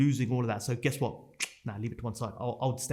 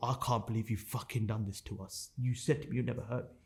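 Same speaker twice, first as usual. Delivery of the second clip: put-on tearful crying, quieter; 5 dB quieter than usual. Retelling the words of a crying wife after seeing the transactions: imitating someone crying. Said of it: "as she's crying, she couldn't even get her words out".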